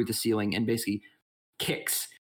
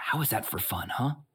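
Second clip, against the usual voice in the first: hushed whisper. Game master voicing a character after the party climbs onto a roof, whispering. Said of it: "Bree kind of like whispers".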